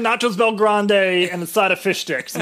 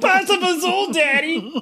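put-on very high child's voice, yelling; 10 semitones higher than usual. A father retells his kids yelling at him while he drives, imitating kids yelling. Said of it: "your kids are yelling".

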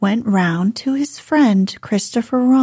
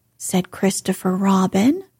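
ordinary delivery

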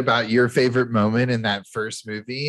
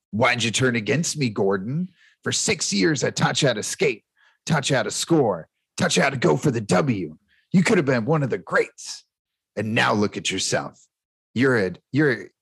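put-on voice of an old coach. Quoting a coach's pep talk from a movie scene: Riley impression. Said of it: "I'll try and do my best Riley impression".

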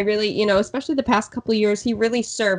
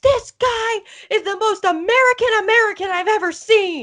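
mock very high-pitched drunken outburst; 13 semitones higher, 4 dB louder than usual. Retelling how drunk fans defended a batter: imitating a drunk fan ranting. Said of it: "very drunk, might I add".

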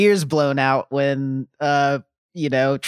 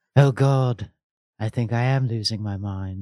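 soft put-on character voice, lower; 4 semitones lower than usual. Imitating a character's lines after critics complain about the voice acting: soft Alucard voice. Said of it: "very soft voice acting".

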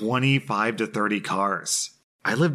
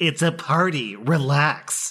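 put-on high, stretched-out, dismissive exclamation; 6 semitones higher than usual. Retelling the neighbor holding a beer, imitating an exclamation.

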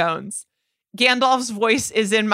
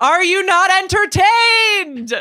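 mock booming, resounding, loud, very high-pitched cry; 10 semitones higher, 5 dB louder than usual. Reading a quoted line from the film Gladiator, booming voice. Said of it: "she adopts a booming voice".

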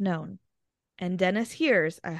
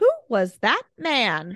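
loud, swooping put-on cartoon voice; 2 semitones higher, 5 dB louder than usual. Retelling a voice heard behind a closing door, in a very high-pitched voice. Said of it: "in a very high-pitched voice".

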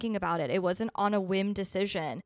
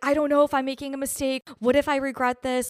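sobbing, freaked-out, hysterical crying panic; 5 semitones higher, 6 dB louder than usual. Retelling a panic before surgery with nurses present: imitating own hysterical crying. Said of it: "hysterically crying".

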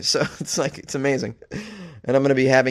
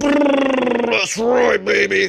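loud, high, boastful, Brrr stretched out; 10 semitones higher, 6 dB louder than usual. Joking about sending a photo of flexing biceps: Macho Man Randy Savage voice. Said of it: "Giving you the Randy Macho Man Savage".

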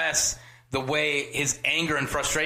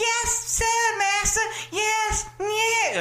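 odd, very high, very slow, drawn-out voice. Imitating a little girl from a film: weird high-pitched voice. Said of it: "Her weird, high-pitched voice".

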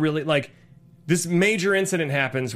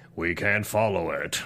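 put-on robot leader voice, much lower; 10 semitones lower, 4 dB quieter than usual. Quoting a character while chatting with another speaker, Optimus Prime impression. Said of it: "That's my Optimus Prime impression".

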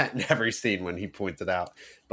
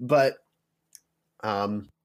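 normal talking voice

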